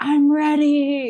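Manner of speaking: mock shouted call, very high. Retelling yelling out to nature in the bush: retelling a yell. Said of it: "I just yelled out".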